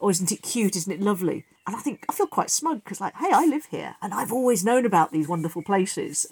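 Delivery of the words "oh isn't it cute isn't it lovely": ordinary talk, nothing marked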